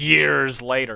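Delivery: heavy emphasis on the word years. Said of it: "I put so much emphasis on the word years".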